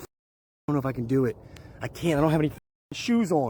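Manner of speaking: high, frightened, hesitant fretting voice. Standing barefoot outside at night, about to walk toward something: scared. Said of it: "I'm so scared right now".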